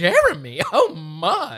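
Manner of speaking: scandalized, swooping, pearl-clutching dismay. Imitating how Kat said Jeremy: pearl-clutching imitation of Kat. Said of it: "the way Kat said Jeremy was the most, like, pearl clutching".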